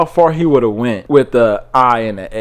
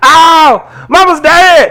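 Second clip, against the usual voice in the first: very high, loud put-on voice, stretched-out "Ow"; 7 dB louder than usual. Listing Dave Chappelle's three voices, Dave Chappelle high voice. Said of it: "He has his his high. ... type of voice".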